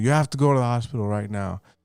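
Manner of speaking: mock-tearful, crying voice. Retelling the night he was sick, imitating his mom crying. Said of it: "She starts crying".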